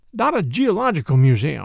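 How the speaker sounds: ordinary delivery, nothing marked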